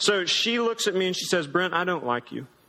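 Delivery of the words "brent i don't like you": put-on sweetly speaking voice. Retelling what Katie said to him on a walk: imitating Katie saying it sweetly. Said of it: "In the sweetest way possible".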